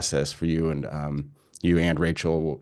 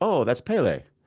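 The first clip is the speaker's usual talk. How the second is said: casual, breezy, nonchalant, pitched-up offhand tone; 8 semitones higher than usual. Retelling a friend's answer about a woman on the lava: imitating a nonchalant reply. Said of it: "her friend just so nonchalant was like".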